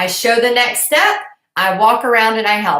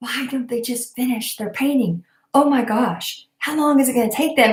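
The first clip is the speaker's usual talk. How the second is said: imitated muttering under breath, quieter; 5 dB quieter than usual. Retelling what the mother-in-law says at paint parties, imitating muttering under breath. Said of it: "she'll say under her breath".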